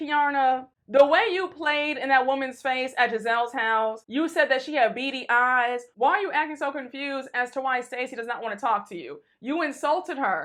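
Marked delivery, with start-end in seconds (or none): none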